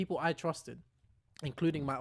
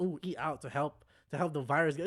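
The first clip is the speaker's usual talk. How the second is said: ordinary talk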